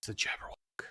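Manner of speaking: whispered, very hushed, kept to a low tone. Warning another character in the game about a monster: whispering in a very low tone. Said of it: "I'll whisper ... a very, uh, low tone".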